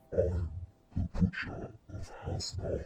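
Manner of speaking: whispering in a warped voice. Retelling whispering to someone after pushing horns into place: distorted whisper. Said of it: "whispered in a distorted voice".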